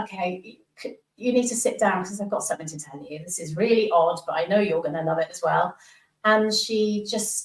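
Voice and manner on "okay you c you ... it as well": usual speaking voice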